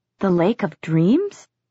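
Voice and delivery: voice full of disbelief. Narrator reads Amethyst's question to Clary, full of disbelief. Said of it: "Amethyst's voice was full of disbelief".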